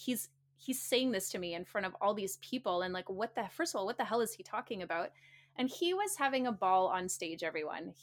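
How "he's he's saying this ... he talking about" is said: usual speaking voice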